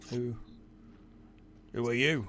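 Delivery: put-on heavily gravelly accent. Narrating, the speaker voices a woman turning to the listener: very gravelly voice. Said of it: "She says with a very gravelly accent".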